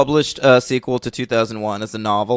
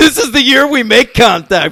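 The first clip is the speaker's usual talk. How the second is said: high, loud, pumped-up pep talk. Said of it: "like, psych themselves up".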